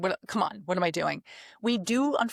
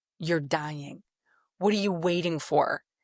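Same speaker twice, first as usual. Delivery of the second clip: put-on affectionate, snarky, sarcastic tone. Retelling what they tell themselves after delaying: imitating own lovingly sarcastic self-talk. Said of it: "talk to myself lovingly with a sarcastic tone".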